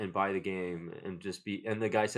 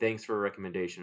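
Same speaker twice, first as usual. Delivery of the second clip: ordinary talk, nothing marked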